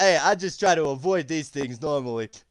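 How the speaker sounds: put-on loud, heavily laid-on New York Italian accent. Voicing Buppito as he answers a player: New York Italian voice. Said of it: "New York Italian at that".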